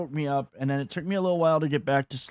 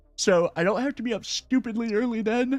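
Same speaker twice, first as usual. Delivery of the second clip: words stretched out mid-yawn, pitched up; 7 semitones higher than usual. Talking through this week's stream schedule while tired, yawning. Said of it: "I'm yawning".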